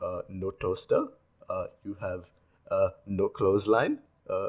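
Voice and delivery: exaggerated Indian accent, halting, with uh fillers. Retelling a man listing off what the speaker doesn't have, in a cliché indian accent. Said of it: "the cliche Indian accent".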